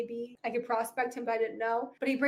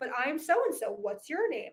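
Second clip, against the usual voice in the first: normal talking voice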